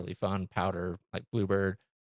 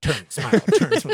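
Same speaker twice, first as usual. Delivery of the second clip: shrill, very high, loud shouting; 11 semitones higher, 9 dB louder than usual. Recalling a dad skiing alongside and yelling instructions: retelling dad's yelled commands. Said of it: "he's just yelling".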